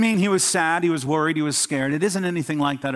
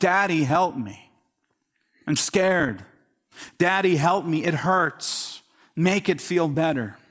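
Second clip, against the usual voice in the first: put-on tearful, crying, pleading little child's voice. A speaker acts out a scared child running to its father, imitating a crying child. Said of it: "and they're crying".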